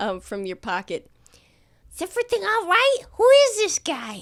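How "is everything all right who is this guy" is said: tiny, very high little voice. Bean speaks up from the player's pocket, in a tiny little voice. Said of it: "go in a tiny little voice".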